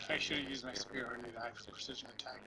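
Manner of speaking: regretful, soft, fast unvoiced whisper.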